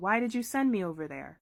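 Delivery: ordinary talk, nothing marked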